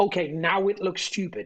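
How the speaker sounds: ordinary talk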